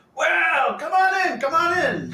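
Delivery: very high, loud, hospitable welcoming call. A halfling gets up to greet guests, hospitable halfling voice. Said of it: "hospitable um, halfling".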